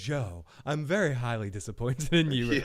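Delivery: put-on deep, soothing voice. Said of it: "usually I hear a voice like that".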